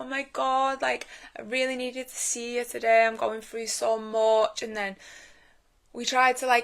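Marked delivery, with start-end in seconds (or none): 0.0-4.6 tearful, weepy, crying pleading. Retelling what a crying member said in the park: imitating someone crying. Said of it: "And she was crying".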